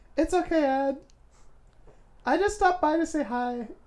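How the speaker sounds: put-on girl voice. Voicing a game character greeting Ed: Sayori girl voice. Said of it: "You never liked my girl voice".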